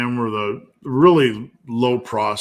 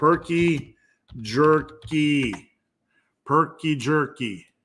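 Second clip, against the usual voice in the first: very slow, best-effort Wisconsin accent; 4 semitones higher than usual. Talking about a jerky snack, saying its name in a Wisconsin accent. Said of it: "I'm saying saying that in my best Wisconsin accent".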